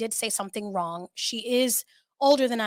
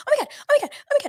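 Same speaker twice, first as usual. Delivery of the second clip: mock, very high, breakneck, panicked repeated babble; 7 semitones higher than usual. Retelling how she reacted on a phone call, imitating frantic rapid talk. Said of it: "I was so calm that it was actually very scary".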